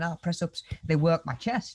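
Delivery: plain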